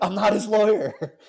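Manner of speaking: very loud, high, exasperated scream. Describing a film scene, retelling how Mark Rylance finally screams his line. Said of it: "he finally like screams like".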